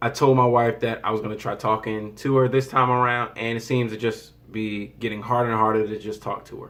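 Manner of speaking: plain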